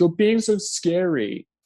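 high, slow, fake crocodile-tears sobbing voice. Mocking someone's crocodile tears while retelling her complaint: imitating fake crying, higher-pitched voice. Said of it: "raises the tone of her voice".

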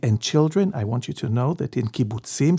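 imitated whispering voice. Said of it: "she would whisper this".

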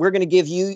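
plain

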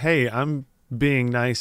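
mock, creepy, overly nice-guy manner. Imitating the creepy businessman from the movie: imitating a creepy nice-guy attitude. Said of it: "It's this very nice guy attitude".

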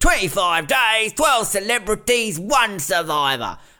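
high announcer delivery. Quoting how the show's introduction ends, in a Dicko voice. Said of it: "in that Dicko voice".

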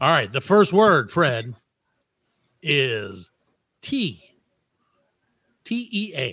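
mock radio announcer voice. Giving a word in a sentence on air, in the whitest radio voice. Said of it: "I'm going to do it in my whitest radio voice".

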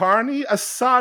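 very high, slow, halting voice. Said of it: "in this halting voice".

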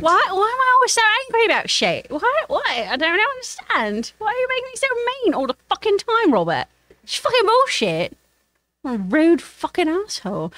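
put-on very high, grumpy, old English-accented bug voice. Asked to improvise a voice, as a disgruntled old english insect. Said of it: "do an old English insect who no longer likes living where they live".

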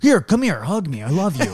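wholehearted, earnest, sincere delivery. Imagining how a partner would answer a fight: imitating Baz, earnest. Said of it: "more earnest energy".

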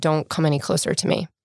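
very clear, distinctly spoken delivery. Speaker retells a survivor's words to an approaching firefighter, retelling a very clear warning. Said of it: "but very clearly said".

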